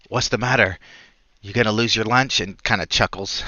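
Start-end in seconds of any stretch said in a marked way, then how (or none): 0.1-2.4 hushed whisper. Speaking from behind a player's character during speeches, whispering. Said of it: "He whispers".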